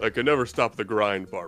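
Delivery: low, heavy, deep put-on character voice. Narrating a scene, the storyteller voices a character answering a visitor at the door in a deep character voice. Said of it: "That's the fucking voice".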